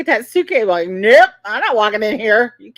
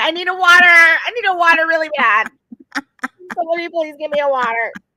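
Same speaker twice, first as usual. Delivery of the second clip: mock needy, desperate begging, repeated over and over; 4 semitones higher than usual. Retelling how she kept asking for water: imitating someone pleading for water. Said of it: "she's over there going".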